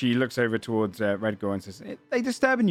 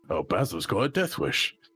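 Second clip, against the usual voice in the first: dry, knowing, amused little aside. As Scott, a few feet from the others, muttered under his breath. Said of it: "smirks and he says under his breath".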